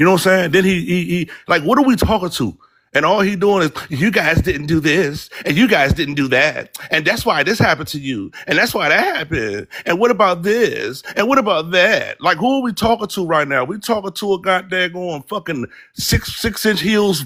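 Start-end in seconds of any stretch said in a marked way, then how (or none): 3.9-12.2 put-on sneering, scornful Valley girl lilt.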